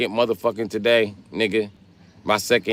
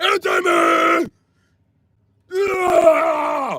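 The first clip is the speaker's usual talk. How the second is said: put-on mocking yelling voice, higher. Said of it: "Why do you keep yelling and imitating me?".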